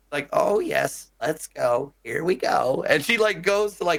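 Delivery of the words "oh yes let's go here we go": put-on slow, elderly old-grandma voice. Describing a character who speaks when you move her; old grandma voice. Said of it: "but in like a grandma voice".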